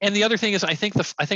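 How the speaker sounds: ordinary delivery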